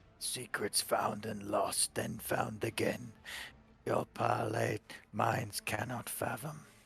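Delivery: rough, hoarse, rasping delivery. Voicing a robed corpse tracing arcane symbols as it speaks: hoarse voice. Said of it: "in a hoarse voice it speaks".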